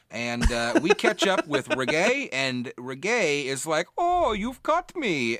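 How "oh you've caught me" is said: put-on German accent, very high pitch. Retelling a game character's line when the group catches up with him, Reggae's German accent. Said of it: "he slipped into his German accent".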